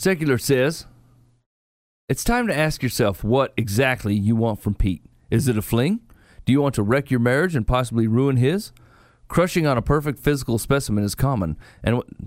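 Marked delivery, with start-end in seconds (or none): none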